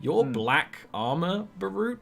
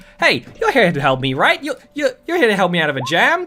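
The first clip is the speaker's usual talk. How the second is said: loud, excited chattering creature voice; 2 semitones higher, 6 dB louder than usual. Voicing a small creature in a jar who hops up when someone walks in, chattering. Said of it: "immediately he hops up and just starts chattering".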